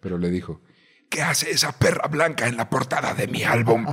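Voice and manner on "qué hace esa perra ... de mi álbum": raspy, scraped-down voice. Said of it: "que me hable con esa voz".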